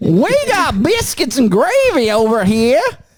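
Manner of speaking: put-on Southern US accent. Trading accents, the speaker says the line in a Southern accent. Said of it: "Was my Southern accent not good?".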